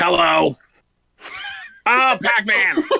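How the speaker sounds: high-pitched voice with a smoker's rasp. Voicing the Ms. Pac-Man figure from the collection: Ms. Pac-Man smoker's voice. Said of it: "I love that she's got a smoker's voice".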